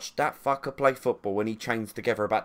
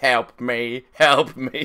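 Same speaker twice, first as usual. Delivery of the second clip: loud, very slow, dim-witted robot voice; 2 semitones higher, 6 dB louder than usual. Picturing defending AI players as a load of robots: dumb robot voice. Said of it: "a load of dumb robots going".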